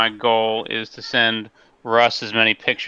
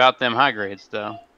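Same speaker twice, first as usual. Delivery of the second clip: usual speaking voice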